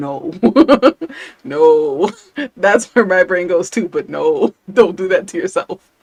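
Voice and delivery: loud, laughing while speaking.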